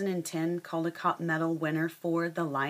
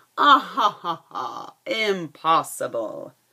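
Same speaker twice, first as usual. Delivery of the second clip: very loud, very slow, booming, drawn-out roaring laughter; 9 dB louder than usual. Narrating a fable, the lion laughs at the mouse's promise, roaring with laughter. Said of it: "he roared".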